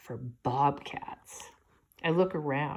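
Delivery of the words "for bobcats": low, hushed, dropped-voice whisper. A narrator reads a character telling the narrator about a hunting trip, dropping his voice. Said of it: "He drops his voice".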